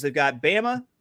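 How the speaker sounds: ordinary talk, nothing marked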